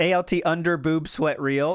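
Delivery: normal talking voice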